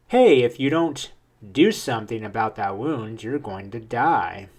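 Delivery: ordinary delivery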